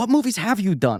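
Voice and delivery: high, fed-up, exasperated tone. Retelling how he asked which movies were done: imitating someone frustrated. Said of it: "he was so frustrated".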